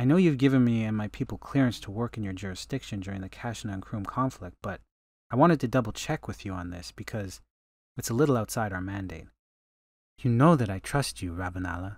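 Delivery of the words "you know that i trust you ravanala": said gently and tenderly. Narrator reads Ravania's reply to Ravanala, said gently. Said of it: "Ravania said gently".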